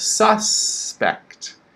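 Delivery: first syllable sus of suspect stressed. Explaining the word suspect with a crime example, stress on 'sus' syllable. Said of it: "Stress on the first syllable".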